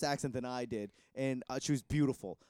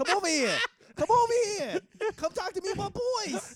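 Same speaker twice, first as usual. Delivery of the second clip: put-on Boston accent, higher pitch. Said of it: "with a Boston accent".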